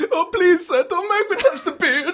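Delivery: put-on Italian accent, pitched very high. Voicing an imagined beard groomer pleading with a customer, Italian-sounding accent. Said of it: "That sounded Italian".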